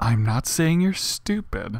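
fake quiet anger, kept under, silently angry. Acting out someone who is quietly angry: mock silent anger. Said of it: "The silent angry".

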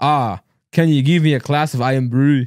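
slow, poor put-on Scottish accent. Asked by the others to do a scottish accent, speaker tries a bad scottish accent. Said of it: "do a Scottish accent".

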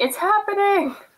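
shrill, very high-pitched yelling shout. Playing a character who runs outside as the light pulses: yelling. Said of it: "I'm yelling".

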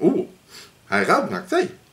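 mouth full of food, pitched a little high. Tasting a milk tea, the speaker talks with a full mouth. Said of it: "nou praat ik met mijn mond vol".

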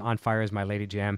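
normal talking voice

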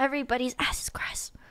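hushed whisper, under the breath. Warning the other players about the next map, whispering. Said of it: "but not whispering?".

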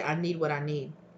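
usual speaking voice

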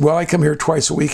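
plain

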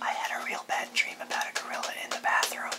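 quick whispered speech.

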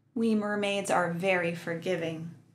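plain

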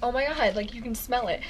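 normal talking voice

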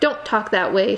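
protesting, objecting tone. A young woman answering what Shamroon has just said, protesting. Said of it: "she protested".

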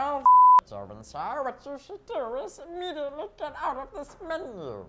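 high pitch with swooping glides. During a game, the speaker gives directions in Bunsen voice. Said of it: "Bunsen sounds like this when he's doing science experiments".

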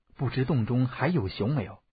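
usual speaking voice

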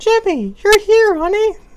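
very high put-on female voice. Voicing the mom character greeting jimmy, put-on woman voice. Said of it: "This is kind of my woman voice".

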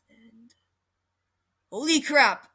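loud exclaiming voice. Looking at someone's channel and reacting: saying it loud. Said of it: "sorry if I said that loud".

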